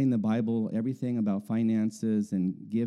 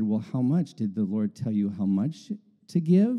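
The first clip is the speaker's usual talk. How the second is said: normal talking voice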